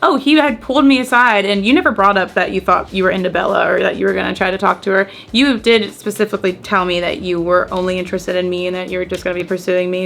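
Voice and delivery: ordinary talk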